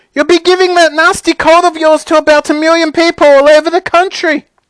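very high, shrill, loud, carrying shout. Mrs. Gloop calls to Augustus, who is lapping chocolate from the river: shouting. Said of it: "shouted Mrs. Gloop".

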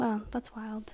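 soft, unvoiced whispered aside.

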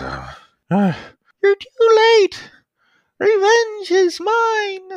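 very high, weak, slow dying man voice. Voicing a coughing, bleeding tiny pilot near death: coughing, dying man's voice. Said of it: "he coughs, and he's bleeding".

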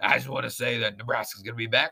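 put-on gravelly coach voice. Answering a request to hear him say it: Ed Orgeron impression. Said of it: "I do a good Orgeron".

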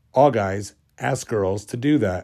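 ordinary talk, nothing marked

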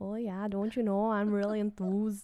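put-on soft, well-done Midwestern accent. Imitating how the other speaker said a word, in a Midwest accent. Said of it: "that was a really good accent".

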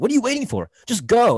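angry pitchman outburst. Retelling the end of a college commercial: imitating an angry commercial announcer. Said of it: "gets genuinely angry".

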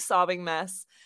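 normal talking voice

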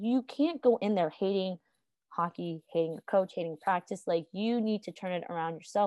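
plain

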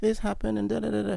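high, whiny, mock crying.

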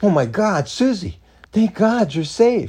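high, relieved outburst, blurted out. Answering a phone call, a woman blurts out to the caller. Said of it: "She blurted out".

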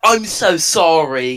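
shy put-on English accent. Playing a part in a group scene, say the apology in an English accent. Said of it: "who is the one who just did the English accent".

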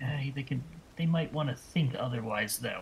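hushed whisper. After handing Lemon a key, a character speaks toward him, whispering. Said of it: "I whisper towards him".

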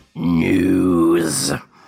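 forceful, aggressive, loud, drawn-out announcer-style call. Announcing the news segment to the other speaker: aggressive. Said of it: "that was a bit aggressive".

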